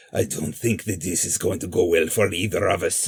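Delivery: low, rough, gravelly detective rasp. Quoting a character's line, in a raspy voice. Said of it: "he's talking in that raspy voice ... Like he talks like that the whole time".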